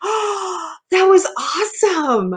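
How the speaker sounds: blissful, high, breathy delighted gasp.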